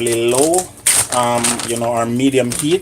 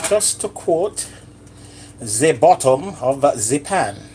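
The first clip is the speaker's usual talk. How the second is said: slow, fake French chef accent; 3 semitones higher than usual. Cooking omelets while playing a French chef, put-on French accent. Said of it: "hear my French accent? That's because I'm a French chef this morning".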